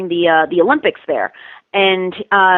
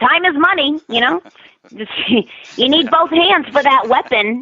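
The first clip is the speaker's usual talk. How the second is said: made-up voice pushed up high; 7 semitones higher than usual. Explaining the high voice they use and showing how it talks, high put-on voice. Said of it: "and you just talk like this".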